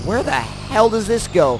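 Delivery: ordinary delivery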